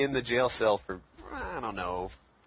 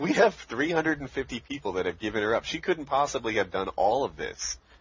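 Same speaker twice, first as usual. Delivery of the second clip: ordinary talk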